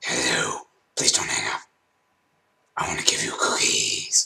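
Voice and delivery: hushed, breathy demon whisper. Speaker shows off their own put-on voice: demon voice. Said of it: "my "Demon Voice"".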